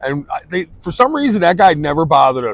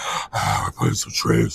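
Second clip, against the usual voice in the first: put-on heavy breathing, deep, breathy, lower and quieter; 7 semitones lower, 6 dB quieter than usual. Imitating an older painter from TV: imitating heavy breathing, deeper voice. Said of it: "he'd be breathing heavy the whole time".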